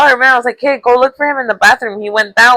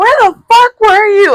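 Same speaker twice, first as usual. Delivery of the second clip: mock mad, furious outburst, pitched way up; 11 semitones higher than usual. Retelling waking up a missing friend, imitating own mad outburst. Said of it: "I was so mad".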